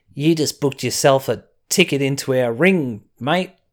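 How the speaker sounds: put-on Aussie accent. Contrasting voices heard on NXT, quoting a ring line in an Australian accent. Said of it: "hear an Australian accent".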